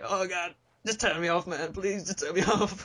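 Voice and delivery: slow, high, fake begging computer voice. Voicing the strained computer begging to be turned off: mock pleading as the computer. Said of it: "my whole pitch is gonna be like".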